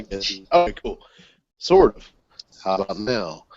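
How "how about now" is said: playful, jokey, put-on seductive tone. Checking whether everyone in the voice chat can hear, in a mock sexy voice. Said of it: "My sexy voice".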